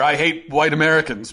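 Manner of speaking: ordinary talk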